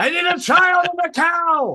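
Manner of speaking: very high, shrill, shouted yell. Telling the scene, the speaker voices Cypher's line: Cypher yelling. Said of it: "Cypher yells".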